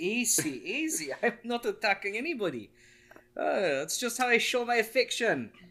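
put-on slight Jamaican accent. Roleplaying a character grabbed by the collar, answering with a slight jamaican accent. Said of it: "Turned a little Jamaican there".

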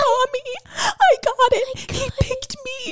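acted tearful, very high, drawn-out sobbing voice. Retelling a girl calling her mom after getting the swan role, imitating someone crying. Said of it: "and she starts crying".

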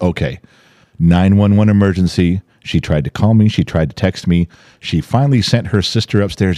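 plain

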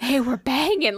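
put-on Southern older woman voice. Teasing a friend about how they sounded, mimicking a 60-year-old Southern woman voice. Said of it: "like a 60-year-old, like, Southern woman".

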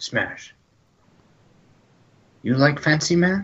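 whispering. Voicing Ukma speaking to Smash about Billy, the narrator is whispering. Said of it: "He whispers".

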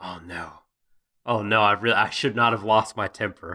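mock-regretful tone. Telling chat how the guy reacted after losing his temper, mock-regretful. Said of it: "because he's like".

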